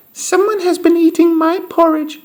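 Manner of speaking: tiny, squeaky, very high voice. Reading the three bears story, Baby Bear finds his porridge eaten: squeaky tiny voice. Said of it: "squeaked Baby Bear in his tiny little voice".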